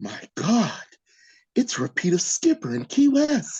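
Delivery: aghast, stunned, shocked disbelief. The Mattel CEO hears news whispered down a row of executives: shocked. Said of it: "the CEO listens with shock".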